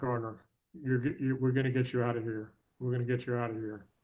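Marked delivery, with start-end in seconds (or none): none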